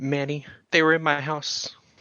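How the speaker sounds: high, tearful voice, close to crying. Voicing a character calling Manny on the phone: in tears. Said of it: "she is almost immediately in tears".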